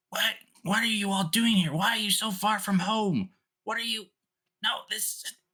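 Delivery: screaming. Voicing a character who meets an old friend from home: screaming. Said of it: "he's just screaming at this face".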